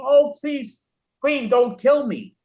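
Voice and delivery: high-pitched, screamed, yelling cry. Acting out a plea in a poem about being terrified: imitating screaming and yelling. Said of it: "I'm screaming and yelling".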